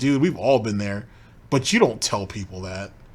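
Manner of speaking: usual speaking voice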